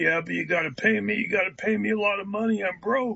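rough, gruff, blunt voice. Retelling a man's answer to a request for a filmed interview: Jimmy's gruff voice. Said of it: "in his gruff voice".

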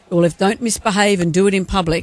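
ordinary talk, nothing marked

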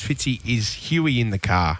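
ordinary talk

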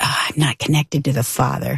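normal talking voice

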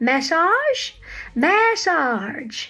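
attempted, put-on Southern accent. Trying to say a word in a Southern accent and failing, attempted Southern accent. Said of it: "I can't even say massage in a Southern accent".

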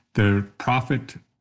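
plain

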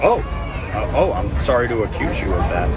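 ordinary talk, nothing marked

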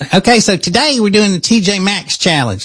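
funny voice, pitched very high. Showing listeners how the speaker's wife talks, imitating wife's funny voice. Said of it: "She talks like this".

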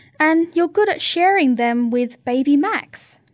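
ordinary delivery

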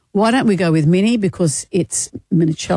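ordinary delivery

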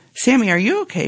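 kind, careful, gentle, pitched a little high. A mother speaks to her distraught daughter, gently. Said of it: "mom asked gently".

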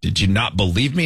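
ordinary delivery

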